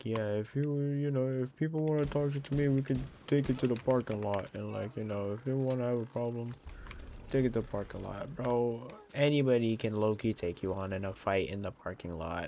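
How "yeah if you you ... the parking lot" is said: boastful, big-talking, swaggering tough-guy voice. Retelling what a coworker says at work: imitating coworker talking big game. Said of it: "He's like".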